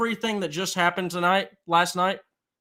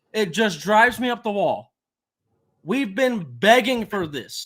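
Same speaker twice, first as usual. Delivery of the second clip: voice rising in loudness; 2 semitones higher, 3 dB louder than usual. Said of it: "I'm sorry if I'm getting loud".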